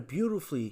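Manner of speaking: mocking, sarcastic tone leaning on beautifully. Introducing another article, calling it beautifully written with sarcasm: sarcastic "beautifully". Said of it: "I say beautifully with sarcasm in my voice".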